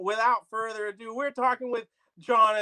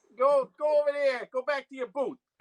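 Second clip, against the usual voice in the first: put-on mock Italian accent, higher; 3 semitones higher than usual. Replaying the Italian-style banter from a past show: put-on Italian accent. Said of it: "that whole banter back and forth".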